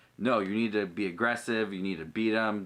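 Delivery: normal talking voice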